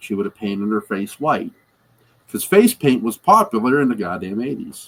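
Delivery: ordinary delivery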